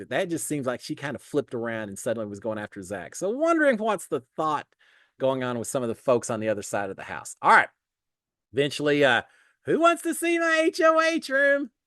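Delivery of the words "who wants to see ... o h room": stretched, very high-pitched voice. Recapping a reality show episode, doing a bad Rachel impression. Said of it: "not a real good Rachel impression".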